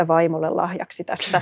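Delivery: muttering half aloud. Retelling what the only man in a book-signing queue said, muttering half aloud. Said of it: "mutisi puoli ääneen".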